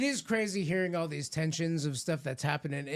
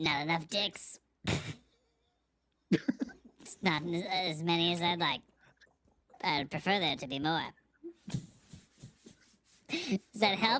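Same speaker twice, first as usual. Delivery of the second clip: fake female voice, put on comically. Answering an interviewer's question in an improvised bit, put-on woman voice. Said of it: "Give me your best woman voice".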